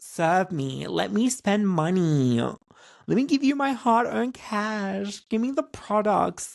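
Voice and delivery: acted drawn-out pleading. Retelling waiting for staff attention in a store: mock begging. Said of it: "I am begging for, like, the staff's attention".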